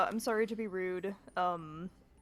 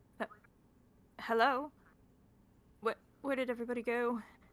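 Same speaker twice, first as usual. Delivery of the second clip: bewildered, confused, stammering call; 3 semitones higher than usual. Calling out for a caravan that is gone: confused, stammering call. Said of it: "notably very confused".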